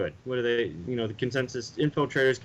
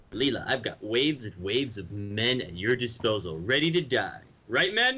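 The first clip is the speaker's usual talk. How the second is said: big sing-song cartoon voice, pitch swooping widely up and down. Showing how a line should have been said, in a Zapp Brannigan voice. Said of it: "you should have said that in a Zap Brannigan voice".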